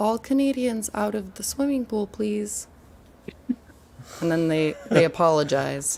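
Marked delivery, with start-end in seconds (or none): 0.0-2.7 calm, courteous, composed, polite tone. Delivering the punchline of a joke about Canadians in a pool; calm, polite voice. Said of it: "You say in a calm, polite voice".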